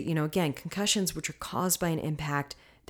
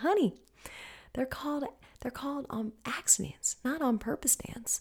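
put-on sweet Southern accent, much higher, quieter; 8 semitones higher, 6 dB quieter than usual. Retelling what a woman said after the car went down the embankment, sweet southern accent. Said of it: "with this sweet Southern accent".

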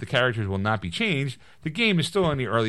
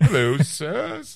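put-on very posh voice, higher and louder; 5 semitones higher, 4 dB louder than usual. Imagining Kevin Feige greeting them: very posh Kevin Feige voice. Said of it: "I now talk, like, very posh".

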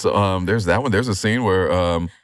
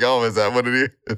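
put-on chuckling, amused laughing through the words; 4 semitones higher than usual. Retelling own reply when told about the blouses: imitating own laughing reply. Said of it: "I'm laughing like".

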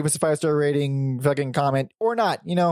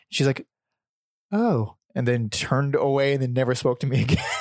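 ordinary talk, nothing marked

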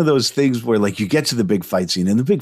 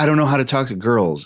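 ordinary talk

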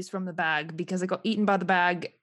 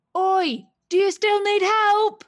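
very high, drawn-out shout carrying across a distance; 12 semitones higher, 8 dB louder than usual. A player calls out to two companions far away in the game: yelling across a distance. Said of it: "Why are you yelling at us from way over there?".

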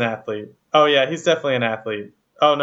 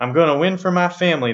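put-on Southern American accent; 4 semitones higher than usual. Introducing a castaway and quoting him, in a Ben Dreebergen impression. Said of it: "I don't even know if I'm doing his accent right".

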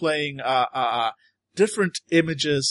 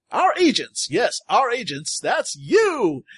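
cheerful, welcoming announcer voice, high and swooping; 7 semitones higher than usual. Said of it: "the pleasant voice".

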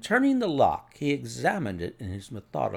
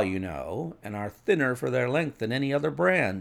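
plain reading voice

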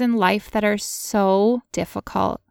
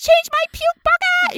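put-on very high-pitched screaming; 4 dB louder than usual. Retelling demands screamed at a boyfriend during pain: imitating own past screaming. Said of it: "I'm screaming at him".

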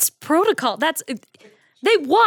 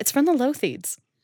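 low, hushed mutter under the breath; 4 semitones lower, 5 dB quieter than usual. Acting out what another player's character will say: imitating someone muttering under breath. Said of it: "under her breath be like".

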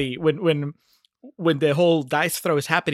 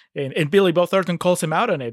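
plain

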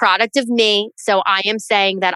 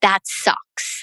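mock mutter under breath, much quieter; 3 dB quieter than usual. Parent retelling what one kid said to the other in the garage, under his breath. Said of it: "kind of like under his breath".

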